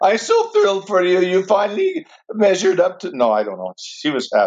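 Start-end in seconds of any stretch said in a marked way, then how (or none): 0.0-3.2 put-on Norwegian accent, pitched up. Retelling their mother's reply on seeing their degree, imitating a Norwegian accent. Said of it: "She had a Norwegian accent".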